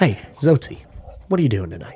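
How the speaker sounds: put-on self-important voice, earnest and intent. Retelling a friend's phone call one night, imitating Jim's earnest tone. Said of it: "talk to you like you were the most important person".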